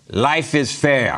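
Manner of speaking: put-on Russian accent. Telling a joke about a Russian guy who worked at the fair: Russian accent. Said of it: "How about that for a Russian accent?".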